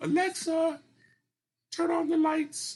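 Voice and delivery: very high, loud falsetto, slow and deliberate. Retelling giving Alexa a command: imitating own falsetto. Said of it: "I kinda had to speak in falsetto".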